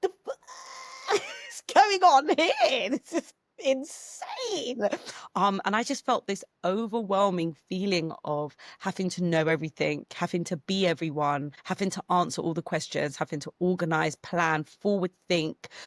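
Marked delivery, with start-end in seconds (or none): 0.0-4.8 high, slow, stunned, panicked disbelief. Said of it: "Then she arrived and I was like".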